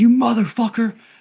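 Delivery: mock, very high, loud, enraged, furious yell. Retelling a movie scene where a man chases someone: imitating someone in a super rage. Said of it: "he gets fucking in a super rage".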